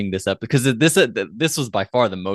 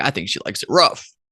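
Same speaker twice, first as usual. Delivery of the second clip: ordinary talk, nothing marked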